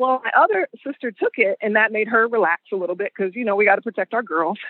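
plain

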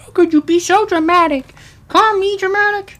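shrill, very high, very loud dog voice. Speaking as the pet dog Tara, who is looking at the speaker, Tara voice. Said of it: "that's my Tara voice".

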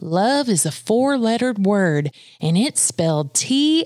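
mock Southern accent, cheerful and joyful. Quoting the speaker's mother's favorite saying, imitating her joyful southern accent. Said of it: "in her joyful Southern accent".

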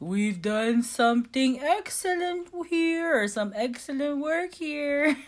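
weird, high, slow fake German accent, badly done. Retelling the opening line of a play: Joey's weird faux German accent. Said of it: "this, like, weird accent".

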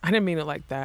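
ordinary delivery

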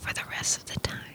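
hushed, breathy, soft whisper, very quiet. Showing what doing ASMR could sound like: whispering. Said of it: "I could be whispering like this".

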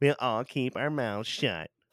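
mocking, taunting, scornful parroting tone. Retelling how a movie character repeats others' words: imitating a character mocking others. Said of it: "mocks them".

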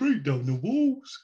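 poor attempt at Birmingham accent. Speaker predicts how Peter from England will come out, imitating Peter's Birmingham accent. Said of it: "Is that your best Birmingham accent?".

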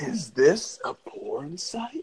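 astonished, amazed tone, like a big find. Quoting how a man said it in that voice, like a discovery. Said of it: "like it's a discovery".

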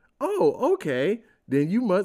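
fake-friendly parent voice, high and sugary.

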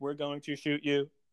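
robotic, mechanical, machine-like voice. Retelling a story where two chronicons threaten to shoot someone, in a robot voice. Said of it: "I just wanted to make the robot voice".

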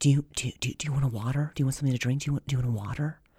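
very quiet half-whisper under the breath. Retelling how a waitress offered a drink during a show: imitating a half-whispering waitress. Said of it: "she whispers".

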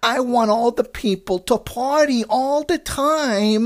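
put-on overdone, drawn-out New York accent. Mocking an Australian actress playing Americans, exaggerated Harley Quinn New York accent. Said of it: "basically the Harley Quinn voice ... just doing this ridiculous, horrible, like, New York accent".

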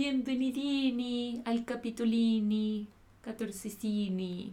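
put-on Italian accent, -ini added to every word. Host joking while welcoming listeners to the episode; fake italian accent. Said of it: "Es igual que tu italiano".

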